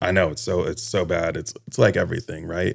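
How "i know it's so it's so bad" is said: ordinary talk, nothing marked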